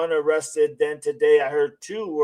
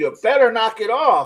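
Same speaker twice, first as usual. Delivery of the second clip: high, scolding, yelled voice; 7 semitones higher, 4 dB louder than usual. Imagining a father behind the other speaker, imitating him yelling. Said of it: "your daddy behind you is yelling at you".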